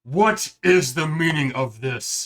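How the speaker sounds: very loud, echoing bellow. Narrating a game, voicing an unseen speaker echoing through the forges: booming voice. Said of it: "You then hear a booming voice echo through the forges".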